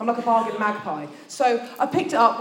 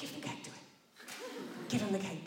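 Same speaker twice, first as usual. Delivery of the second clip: soft, hushed, close whisper; 17 dB quieter than usual. Retelling what Pip said into the speaker's ear: imitating a whisper. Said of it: "Pip whispers in my ear".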